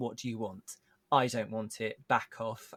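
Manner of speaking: ordinary delivery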